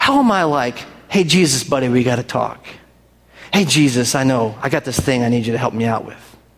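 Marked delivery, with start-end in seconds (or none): 1.1-6.2 easygoing, casual, chummy pal-to-pal talk. Acting out talking to Jesus as if to a buddy: acting casual and chummy, imitated. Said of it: "so comfortable with Jesus".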